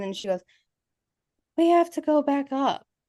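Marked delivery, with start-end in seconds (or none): 1.6-2.8 high, completely monotone drone. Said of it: "It was completely monotone".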